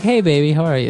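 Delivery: affectionate, kindly, sweet voice. Showing how to use a pet name with a loved one: nice, sweet way. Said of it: "It's like, nice".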